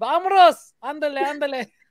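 very high-pitched, put-on Spanish accent. Greeting the audience in Spanish for fun: put-on Spanish accent. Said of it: "I'm not doing the accent anymore".

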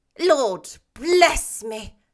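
winded, gasping, breathless, astonished cry. After a man whispers in his ear, the gentleman responds: breathless cry. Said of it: "cried the gentleman, as if his breath were taken away".

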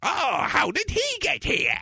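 very high, garbled, unintelligible villain babbling voice. Speaker retelling a Batman scene, doing a garbled Joker voice. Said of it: "that's how the Joker speaks".

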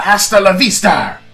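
said nice and loud. Signing off as asked, nice and loud: said nice and loud. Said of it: "nice and loud".

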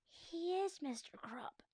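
slow, drawn-out, hushed whisper. George corrects Harold about Captain Underpants, whispered. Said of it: "whispered George".

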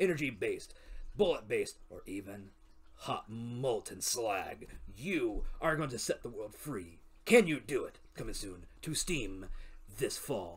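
slow, dramatic movie-trailer announcer delivery. Performing a mock game trailer, movie trailer voice. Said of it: "I just want to hear 10 more seconds of trailer voice".

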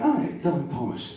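put-on Scottish-accented speech. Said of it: "they both spoke in Scottish accents".

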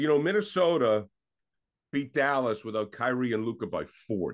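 usual speaking voice

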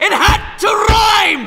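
high, loud, slow mock-angry outraged shout.

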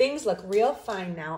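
plain

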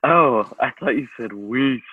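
cartoon starfish character voice. Recalling a line written in the show notes, done as a Patrick impression. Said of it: "That's a pretty good Patrick impression".

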